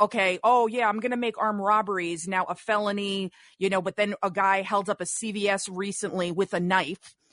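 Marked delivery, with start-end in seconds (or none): none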